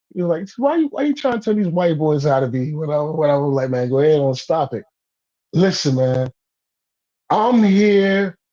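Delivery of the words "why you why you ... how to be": casual, offhand nonchalance, tossed off. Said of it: "he said it nonchalantly".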